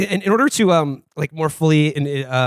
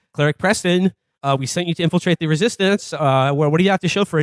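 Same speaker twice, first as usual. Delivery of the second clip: ordinary delivery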